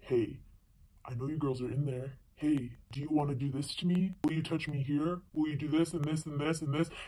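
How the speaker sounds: put-on super low, very deep voice. Retelling what a man said to her and her friend: imitating a super low voice. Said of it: "it's like this super low voice".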